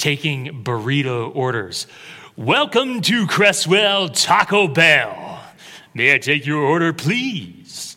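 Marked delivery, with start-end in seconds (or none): 2.4-8.0 polished public-speaking delivery. Recalling taking burrito orders at a drive-through, in a refined oratory voice. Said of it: "I tried to use my refined oratory voice".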